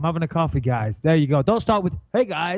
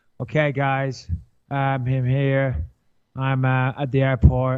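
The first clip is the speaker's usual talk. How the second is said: low, very slow, dead-flat robotic monotone; 4 semitones lower than usual. Mocking how people talk in their Instagram stories, in a robotic monotone. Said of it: "if you talk like a robot".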